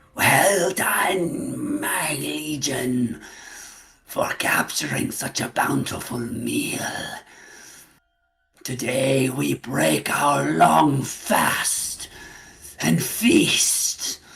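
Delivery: very slow, very loud, booming, drawn-out monster-queen voice. Voicing a creature queen who praises her legion for the captured meal: creature queen voice. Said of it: "You hear a voice in your heads".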